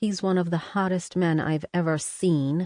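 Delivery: ordinary delivery, nothing marked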